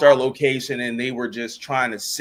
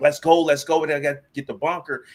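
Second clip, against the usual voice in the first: mock urgent, rallying put-on yell; 3 semitones higher than usual. Retelling clearing soldiers out of a building under mortar attack: imitating his own past yelling. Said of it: "I'm yelling at them like".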